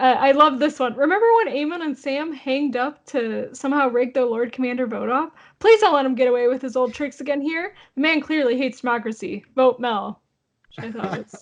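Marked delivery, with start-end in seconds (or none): none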